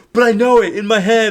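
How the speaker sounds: very high, loud, stubborn insistent tone.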